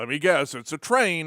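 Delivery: normal talking voice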